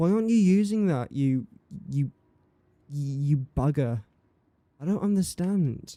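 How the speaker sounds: exasperated, fed-up, angry, frustrated outburst. Struggling with rocket fuel in a game: angry frustration. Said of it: "I'm really angry right now".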